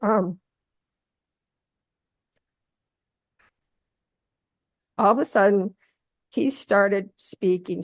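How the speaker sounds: fighting back tears. Recounting how he suddenly started speaking, holding back tears. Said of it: "I'm going to try to do this without crying".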